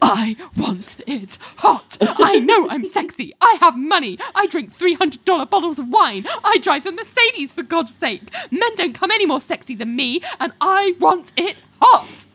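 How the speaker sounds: put-on very high, breathless, out-of-breath voice. Retelling a scene, the speaker acts out Richard's reply to Ling, mock-breathless Richard. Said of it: "And Richard says breathlessly".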